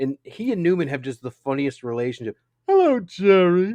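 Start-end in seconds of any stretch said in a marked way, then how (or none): 2.7-3.7 booming, very loud, high-pitched belted voice. Describing a sitcom's funniest relationship, doing a Newman impression. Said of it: "that was good".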